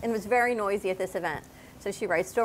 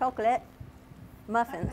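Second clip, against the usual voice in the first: quieter, put-on British accent; 5 dB quieter than usual. Asked what's wrong with her mouth, the speaker repeats the words channeling Sally. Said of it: "What are you, French now? You're British?".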